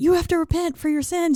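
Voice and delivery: very high-pitched, furious, angry shouting. Recapping a show scene where Aiden starts yelling, retelling Aiden's yell. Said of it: "And Aiden starts yelling".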